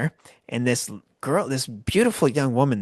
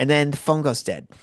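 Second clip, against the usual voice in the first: ordinary talk, nothing marked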